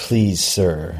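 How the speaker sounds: plain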